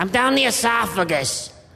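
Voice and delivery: muffled duck voice, as if from inside. Playing a duck stuffed inside a turkey, calling out: voice of a duck inside a turkey. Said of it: "coming a little lower".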